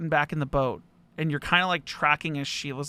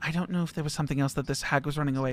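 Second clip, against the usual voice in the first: panicked, panicky voice; 4 dB quieter than usual. Voicing a character who looks around a room after a glow: panicked voice. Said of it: "more panic in her voice than you guys have ever heard".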